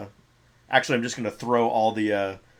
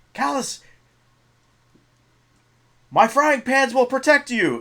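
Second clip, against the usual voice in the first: shrill, very high, loud put-on character yell; 14 semitones higher, 6 dB louder than usual. Voicing a character casting a shield on callus: yelling in character. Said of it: "I'm gonna yell".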